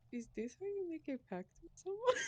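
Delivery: rapid, very high-pitched quick aside. Voicing Bella once the men leave the tavern: muttered under her breath. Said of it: "just goes under her breath".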